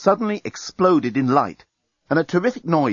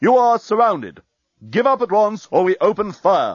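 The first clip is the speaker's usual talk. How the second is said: booming voice, pitched high, as over loudspeakers; 7 semitones higher, 4 dB louder than usual. A voice suddenly booms over the starship's loudspeaker system. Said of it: "A voice suddenly boomed".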